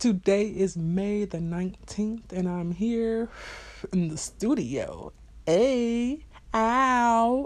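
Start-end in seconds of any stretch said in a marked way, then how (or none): 5.5-7.5 high put-on voice with the "ow" stretched long. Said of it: "in my [name] voice".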